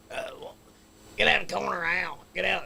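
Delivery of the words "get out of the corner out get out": loud, high, rough raspy yell. Imitating a guy they used to make fun of: raspy voice. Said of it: "like a real raspy voice".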